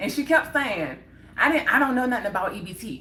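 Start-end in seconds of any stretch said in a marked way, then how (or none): 1.4-3.0 acted rude, nasty store-clerk tone. Retelling the cashier's repeated reply: imitating a nasty cashier. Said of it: "She was so nasty".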